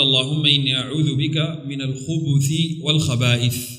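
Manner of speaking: plain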